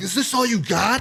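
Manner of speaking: very high, challenging scream directed upward. Retelling drunkenly screaming at the sky in the woods: retelling screaming at the sky. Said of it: "I'm screaming at the sky".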